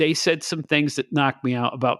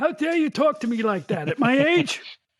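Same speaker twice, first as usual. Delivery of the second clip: mock cranky old man voice, higher; 12 semitones higher than usual. Joking with the other speaker in a put-on grumpy old man voice. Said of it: "I'm just joking".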